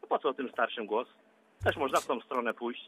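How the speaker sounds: low, wry, sardonic, tongue-in-cheek irony. Discussing voting for people over 65, the speaker answers ironic and wry. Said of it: "Z przekąsem pan mówi".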